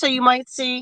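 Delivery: New York accent slipping out. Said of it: "my New York accent just came out".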